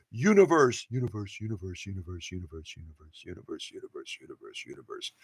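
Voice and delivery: very low, hushed, fading echoing repeats. Speaker mimics an echo effect while retelling a quote, echo voice. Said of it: "I want to do the echo voice when I do that".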